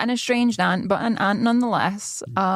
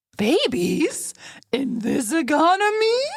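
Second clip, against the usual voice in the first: put-on sing-song, pitched-up baby-talk voice; 7 semitones higher than usual. Trying a second line read of the phrase, talking to a baby. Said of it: "Sounded like you were talking to a baby with that voice there".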